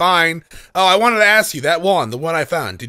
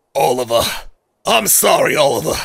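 put-on little girl voice, lower pitch; 4 semitones lower than usual. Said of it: "are you not gonna give her the Rydia voice".

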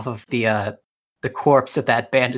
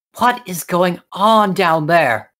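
high, feminine, ladylike princess voice; 6 semitones higher, 3 dB louder than usual. Narrator voicing a princess calling down from a balcony, feminine voice. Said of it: "you can hear a feminine voice".

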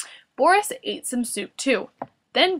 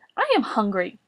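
ordinary delivery

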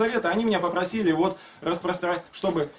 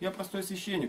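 mock very quiet, soft, meek and humble; 10 dB quieter than usual. Retelling a department head's reply to the speaker, imitating someone meekly humble. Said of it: "вот так, он смиренно так ответил, прям очень смиренно".

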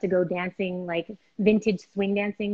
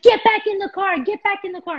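high, loud angry yelling. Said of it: "he's like".

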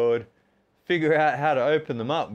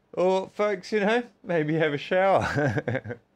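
words stretched out, spoken through a yawn; 4 semitones higher than usual. Talking to his audience after push-ups about his plans, yawning. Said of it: "I know yawning's contagious".

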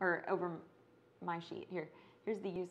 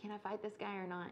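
put-on alarmed, panicked, frantic, scrambled delivery; 2 semitones higher, 4 dB quieter than usual. Retelling a board game loss, imitating own panicked question. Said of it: "that's when I was panicking".

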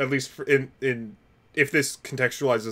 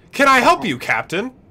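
shrill, very high and very loud voice; 12 semitones higher, 8 dB louder than usual. Answering the captain over the comms as Ada: Ada's voice over the comms. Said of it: "does Ada's voice reach all the way down here".

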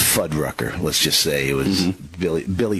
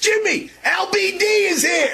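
high, stretched-out yelling. Retelling a waiter calling out across the restaurant: imitating a waiter yelling. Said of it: "he yells back".

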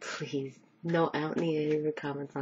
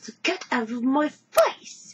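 fake British accent, higher and louder; 10 semitones higher, 8 dB louder than usual. Joking that she doesn't randomly yell at people: put-on British accent. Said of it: "in British accent".

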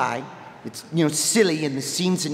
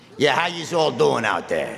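put-on cartoon bartender voice. Greeting the audience, speaking in a Mo the bartender voice. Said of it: "Mo the bartender would like to say hi".

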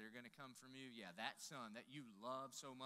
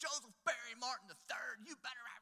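mock screaming, much higher and much louder; 11 semitones higher, 10 dB louder than usual. Speaker retells their mom yelling their full name from the porch: imitating mom screaming. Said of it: "she's just screaming at me".

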